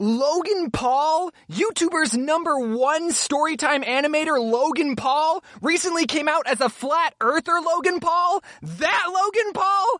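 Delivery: high, slow, shocked disbelief.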